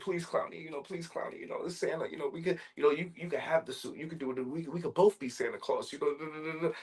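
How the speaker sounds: acted, high-pitched, babbling pleading. Retelling a film scene, acting out Santa's words: imitating Santa pleading for his life. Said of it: "Santa's pleading for his life".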